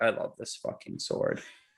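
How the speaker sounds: put-on deadpan whisper, dry and emotionless. Acting out how Anil would say a line about a sword: imitating Anil's deadpan. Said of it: "deadpan say".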